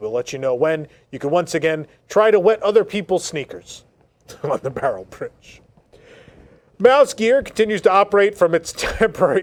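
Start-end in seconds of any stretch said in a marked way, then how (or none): 4.4-9.4 words broken up by giggles, laughing. Reading out updates while still amused by an earlier item, laughing while speaking. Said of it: "I'm still laughing about the Barrel Bridge".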